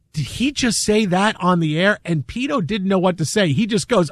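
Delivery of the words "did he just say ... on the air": ordinary talk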